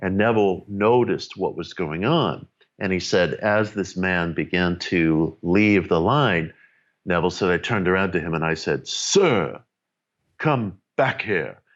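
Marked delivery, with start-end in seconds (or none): 8.9-11.5 put-on commanding, imposing mid-Atlantic accent, slow and drawn out. Retelling how Neville called back a man leaving the line, in an imposing mid-Atlantic accent. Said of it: "now in this very imposing mid-Atlantic accent".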